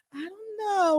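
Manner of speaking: sweet, high, little voice. Retell how Miss Monica answered your invitation to an interview, in Miss Monica's sweet little voice. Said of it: "with that sweet little voice".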